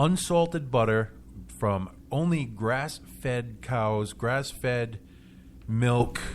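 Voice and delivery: slow deliberate speech. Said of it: "let me say this a little slower".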